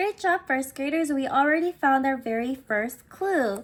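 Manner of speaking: ordinary talk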